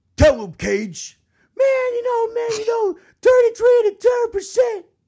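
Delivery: very loud, high-pitched commentator yell. Retelling a wrestling promo, imitating Taz's line to Cage. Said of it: "like Taz goes".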